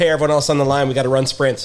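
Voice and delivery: ordinary talk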